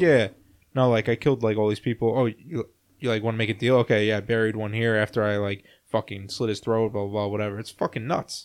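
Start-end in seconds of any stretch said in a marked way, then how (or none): none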